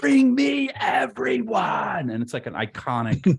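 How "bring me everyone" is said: put-on shrill, very high, loud scream. Describing a famous movie moment where an actor screams at a guy: Gary Oldman scream impression. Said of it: "he screams at a guy and goes".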